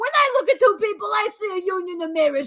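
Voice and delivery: sing-song, high, witchy woman's voice. Recreating how a woman sounded, the speaker does a Love Witch impression. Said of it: "that is how this woman sounded".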